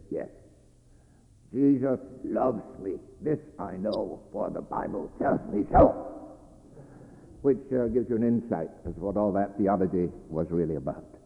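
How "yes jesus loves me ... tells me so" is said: put-on heavy German accent, leaned into hard. Retell Dr. Barth's answer to a seminarian asking for a one-sentence summary, as Dr. Barth in a heavy German accent. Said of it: "in his heavy German accent said".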